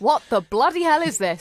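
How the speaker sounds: put-on loud Cockney accent. Imagining Paul cutting into a pie with paper in it, do a Paul impression in a Cockney accent. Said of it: "Or in a less Cockney way".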